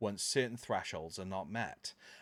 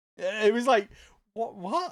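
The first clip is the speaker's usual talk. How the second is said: usual speaking voice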